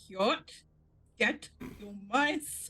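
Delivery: words pushed out through clenched teeth. Speaker recalls Ariel ordering Yacht, imitating Ariel, clenched teeth. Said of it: "has said with clenched teeth".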